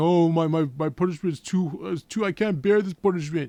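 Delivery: mock, slow, whiny, weepy crying voice. The speaker mocks a man who killed his brother, imitating someone crying. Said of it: "now you're crying, saying".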